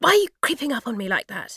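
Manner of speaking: angry hissing whisper. Narrating Lily rounding on Jess for creeping up on her, angry hissing whisper. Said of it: "She hisses at Jess in an angry whisper".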